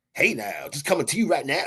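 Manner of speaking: classic radio announcer voice. Praising someone for not having the radio guy sound: radio guy voice. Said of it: "you don't have the radio guy sound".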